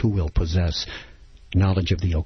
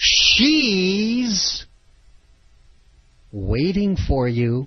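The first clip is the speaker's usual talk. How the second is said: she leaned on hard with heavy stress; 13 semitones higher than usual. Repeating exactly how she said it, stress on she. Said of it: "Notice the inflection. ... she was putting the accent on she".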